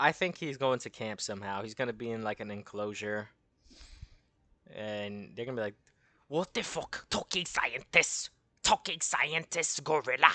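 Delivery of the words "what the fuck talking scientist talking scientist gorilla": Nazi soldier voice, pitched up. Imagining the army finding him in an enclosure, doing a Nazi impression. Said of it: "That's my best uh, Nazi impression".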